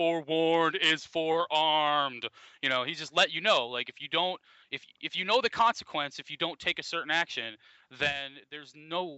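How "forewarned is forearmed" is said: heavy, booming robotic voice. Retelling what he always used to say when they came into class, in a big booming Terminator voice. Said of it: "he's saying this big fucking booming, like, Terminator voice".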